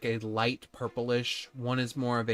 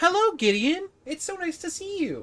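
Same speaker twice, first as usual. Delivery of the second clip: very high, loud little mouse voice; 5 dB louder than usual. Voicing a little mouse man who runs up to Gideon in a bar: voicing Skiver, a little mouse man. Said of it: "a little mouse man named Skiver sort of run up to you and just say".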